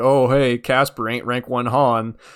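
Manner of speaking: slow, mocking, sarcastic tone. Retelling a mocking group chat message: imitating a sarcastic remark. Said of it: "was being sarcastic, like".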